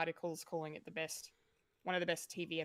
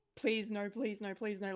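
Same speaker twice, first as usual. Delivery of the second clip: put-on, desperate, pleading squeal; 4 semitones higher than usual. Retelling Ellie's plea as Abby picks up the club: imitating Ellie's desperate begging squeal. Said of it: "her voice just turns into this squeal of".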